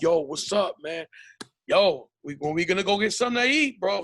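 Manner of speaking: imitated New York accent. Describing how Mexicans from New York talk, imitating a New York accent. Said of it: "they have the accent like".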